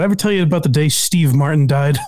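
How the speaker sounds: usual speaking voice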